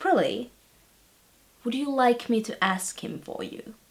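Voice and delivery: soft but firm authoritative voice. Recounting an earlier conversation, retelling an authoritative tone. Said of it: "with authority still in my voice".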